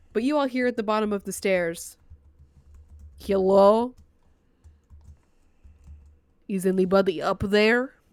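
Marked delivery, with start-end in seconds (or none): 3.1-7.8 slow, loud witch-like voice. A game master voices someone calling up from the bottom of the stairs, witch-like voice. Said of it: "He sounded like Mr. Witch".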